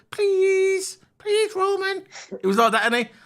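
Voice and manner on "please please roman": put-on geeky pleading voice, higher pitch. Mocking a geeky little guy begging Roman to be friends: imitating Sami Zayn begging. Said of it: "little geeky man".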